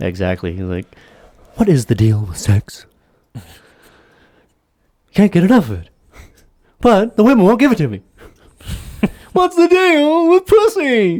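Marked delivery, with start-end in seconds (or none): 1.6-11.2 high-pitched, wildly swooping stand-up comic delivery. Doing a stand-up bit as Jerry Seinfeld: Jerry Seinfeld impression. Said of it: "That's my best Jerry Seinfeld".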